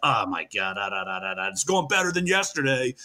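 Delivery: acted muttering under breath. Retelling a teammate's reply at practice: imitating someone muttering under his breath. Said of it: "muttering under his breath".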